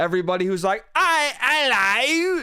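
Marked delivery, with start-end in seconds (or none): 1.0-2.4 very high, mocking, put-on British accent. Mocking people who say Happy Christmas: mocking British accent. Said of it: "everybody who talks like this".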